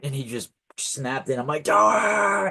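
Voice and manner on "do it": very high screamed shout. Retelling having a bone snapped back into place: imitating his own scream. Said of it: "I was screaming like that".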